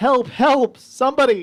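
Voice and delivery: very high, frantic, breathless panicked yelling. A game narrator voices something running through the jungle, panicked, out-of-breath yelling. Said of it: "out of breath as it's running and just panicking and just yelling".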